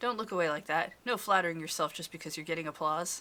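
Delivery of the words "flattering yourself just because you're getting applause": plain reading voice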